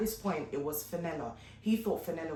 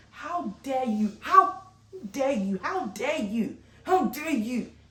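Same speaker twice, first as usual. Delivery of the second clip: furious, raised, repeated angry shouting; 8 semitones higher, 8 dB louder than usual. Retelling shouting at a man on the phone over a service, retelling a furious shout. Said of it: "I'm shouting at him".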